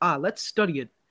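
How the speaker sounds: plain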